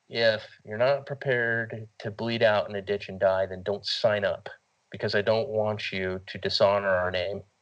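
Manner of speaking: ordinary talk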